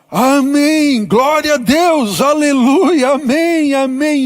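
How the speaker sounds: mock high, slow ecstatic shouting, amém stretched long. Retelling a story of a father reading his bible: imitating a father shouting praise. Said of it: "ele começou a gritar".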